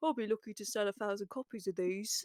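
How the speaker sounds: put-on hushed English accent leaning slightly Brummie. Quoting how a man does an English impression, the speaker uses a mock Brummie-ish English accent. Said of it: "it always sounds a bit Brummie-esque".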